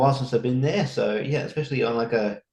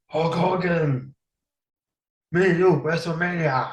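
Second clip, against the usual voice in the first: put-on French accent, pitched higher; 6 semitones higher than usual. Doing an impression when asked to: Andre the Giant impression. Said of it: "you're doing an impression of Andre the Giant".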